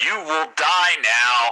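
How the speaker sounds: loud, growling, threatening creature voice. A game master voices a Wookiee speaking to the player Zop; growling Wookiee voice. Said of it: "and then the Wookiee growls".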